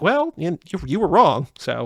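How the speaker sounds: plain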